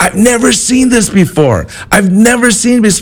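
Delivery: very high, frantic panicked screaming.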